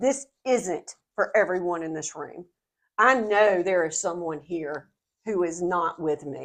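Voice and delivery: ordinary talk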